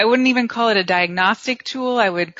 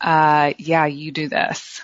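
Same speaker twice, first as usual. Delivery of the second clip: slow, belittling, shaming, demeaning tone; 4 semitones lower than usual. Showing how an accusing 'you always' sounds, in a mock demeaning tone. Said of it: "it's usually with a tone of like this demeaning tone".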